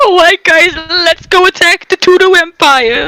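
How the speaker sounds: put-on squeaky, high teen voice like a boy in puberty. Joking about the character as a teen rallying his men to attack, squeaky teen Griffith voice. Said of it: "I just imagine Griffith as like a squeaky voiced teen".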